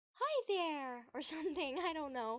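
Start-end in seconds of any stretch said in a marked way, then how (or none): 0.2-1.1 put-on, higher-pitched character voice. Showing how you can change your voice for a character, in a higher pitched character voice. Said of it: "I can do a higher pitched".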